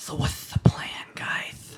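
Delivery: sudden, hushed, breathy, close whisper. Narrator voices an unseen figure appearing beside Wu Dam: Tipsy Bongwater whispering. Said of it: "you hear a voice whisper next to you".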